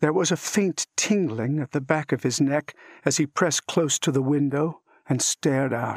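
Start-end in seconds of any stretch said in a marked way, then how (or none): none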